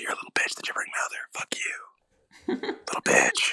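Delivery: taunting in a whisper. A player sends a telepathic taunt to the gibbering mouther, whispered taunt. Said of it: "whisper a message".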